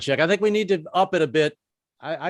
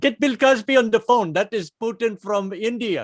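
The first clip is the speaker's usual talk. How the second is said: half-botched put-on Indian accent; 6 semitones higher than usual. Imagining what a man said afterwards, doing a put-on Indian accent. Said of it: "I'm doing an I'm doing an Indian accent".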